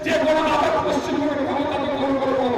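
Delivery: normal talking voice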